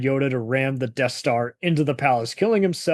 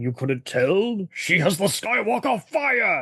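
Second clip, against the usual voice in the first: feigned surprise, pitched higher; 6 semitones higher than usual. Reading a line said by the Emperor: Christopher Walken voice. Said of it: "I read that in a Christopher Walken way".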